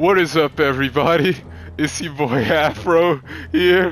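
speaking through laughter. A streamer greets viewers at the start of a video, laughing while talking. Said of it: "Sorry that I'm laughing".

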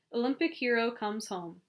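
plain reading voice

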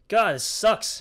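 loud, high, exasperated frustrated yell. A streamer playing a game yells. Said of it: "I'm sorry for yelling".

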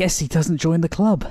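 out of breath, panting. Narrator, having chased a fleeing friend, speaking while still breathing hard. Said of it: "still breathing hard".

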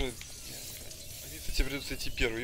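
very soft, slow, hushed whisper. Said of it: "Как же быстро".

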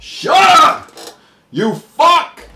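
angry, very loud, high, slow, drawn-out yell. Cutting off a talking voice in the racing game: yelling. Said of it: "I'm sorry I yelled at you".

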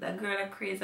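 ordinary talk, nothing marked

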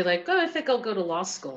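normal talking voice

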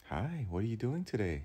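sing-song voice used for talking to toddlers. Urging listeners to use that tone with themselves, the speaker demonstrates a voice for a small child. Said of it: "how about you use that voice".

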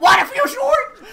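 high, loud playful yelling.

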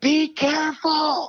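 acted yell, way up high. Retelling a surf session, a friend's warning while paddling out: imitating a yell. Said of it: "he just yelled at me".

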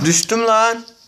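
shouting. Playing a game on stream with a friend, yelling. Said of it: "Ya ne bağırıyorsun?".

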